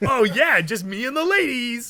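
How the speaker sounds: loud, high-pitched surfer-guy voice. Describing a bad cartoon and imitating its character Ken: Ken surfer guy voice. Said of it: "he definitely has that same voice".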